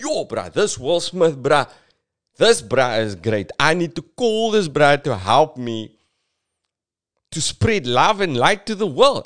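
put-on high voice in a South African accent. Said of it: "God suddenly has my accent".

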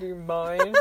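mock curt, snippy, snotty, bitchy tone. Repeating own earlier question to show how it sounded: imitating own bitchy tone. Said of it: "I said that so bitchily".

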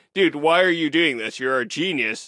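put-on angry voice. Retelling the novel's opening as Watson gets pissed off: imitating angry Watson. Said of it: "really pissed off".

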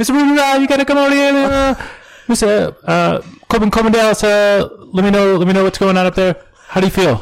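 very high, squealy, comic voice with pitch cranked up. Acting out a scene from The Fifth Element: Chris Tucker impression. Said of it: "that was a spot-on Chris Tucker impression".

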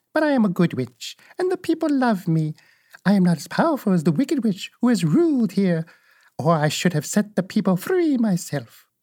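sweet voice, lifted slightly high. Narrator reading, the good witch answers Dorothy: sweet Witch of the North voice. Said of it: "But the little old woman walked up to Dorothy, made a low bow, and said in a sweet voice, ... and said in a sweet voice".

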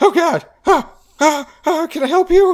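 very high, very loud, shrill startled squeak. Voicing a surprised small devilfish found reading a romance novel: surprised small devilfish voice. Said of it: "surprised face of a very small devilfish".

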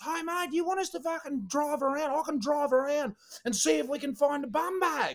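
mock, very high, shrill holler from a distance. Retelling a man calling across the park to them, retelling a yell. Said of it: "he's yelling across the park at me again".

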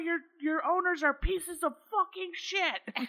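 very high-pitched, ranting yelling. Retelling yelling at the neighbors' dogs: imitating own yelling. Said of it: "I just start yelling at the dogs".

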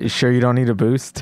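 muttered under breath. In a tabletop game, a player speaks as their character after a climb, muttered under breath. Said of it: "Suzette would like to mutter under his breath".

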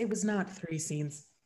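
very low, dramatic storyteller narrator voice. Chatting about how many scenes a play has, cutting in with a narrator voice. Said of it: "Narrator voice".

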